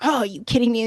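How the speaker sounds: put-on annoyed outburst. Retelling finding a chore still undone: imitating own annoyed outburst. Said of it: "huffing and puffing and just annoyed".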